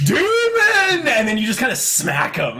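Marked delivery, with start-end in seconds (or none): 0.0-1.1 shrieking, overloud, very high, drawn-out yell. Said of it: "he gets, like, out the whole".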